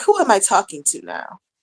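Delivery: casual, relaxed tone. Retelling husband's reply when she talks oddly: imitating husband. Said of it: "He be like".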